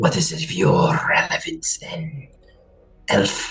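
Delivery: slow, deep creature voice. Voicing a creature speaking into a player's mind: creature's voice in the mind. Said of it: "the voice of this creature in your mind".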